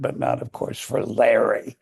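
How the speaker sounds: withering, scornful tone dripping with contempt. Retelling what she said about the great actors' bad reviews: imitating a contemptuous tone. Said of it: "her tone dripping with contempt".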